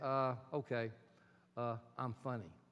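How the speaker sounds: mock very low, flat, hesitant deadpan. Retelling another person's answer about what he is good at: imitating a deadpan reply. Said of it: "He looked at me deadpan and said".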